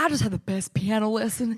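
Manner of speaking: bubbly, excited, put-on Texan twang. Retelling an excited story post about a piano lesson: texan accent. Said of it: "going off in this Texan accent".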